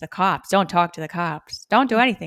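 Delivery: 1930s film-noir mid-Atlantic detective accent. Showing how one character was voiced as a film-noir detective, in a 1930s mid-atlantic detective accent. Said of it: "going to talk in a mid-Atlantic accent like".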